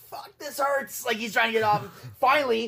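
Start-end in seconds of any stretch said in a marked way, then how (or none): 0.1-1.0 play-acted, breathy, whispered howl of pain. Retelling how a man screamed while someone would not let go, in pain. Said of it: "He's like screaming".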